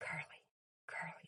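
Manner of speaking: whispered. Retelling a mother calling out to her child at night, imitating her as a whisper. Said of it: "in a whisper".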